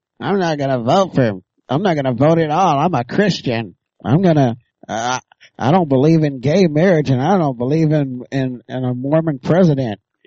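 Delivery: mocking, put-on, dim-witted idiot voice. Mocking some people's reasons for not voting, in a mocking idiot voice. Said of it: "That's my idiot voice".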